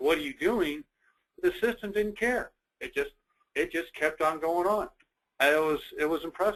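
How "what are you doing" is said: mild, half-shouted voice. Retelling a reaction to the director deleting documents: imitating own past scream. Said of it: "I screamed at him, like".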